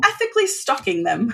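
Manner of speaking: put-on British accent. Repeating their own phrase to the others in the conversation: British accent. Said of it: "I said it in a British tone".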